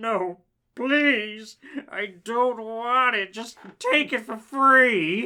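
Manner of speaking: put-on creepy, ominous tone. Retelling what the old man running the tag sale said, in a scary tone. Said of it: "he said in a scary tone".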